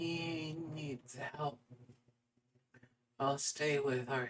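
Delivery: very quiet, small, soft, high voice. A woman speaks to the player characters about the missing man, in a small voice. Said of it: "You hear in her small voice".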